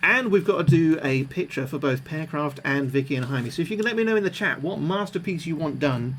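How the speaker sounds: ordinary delivery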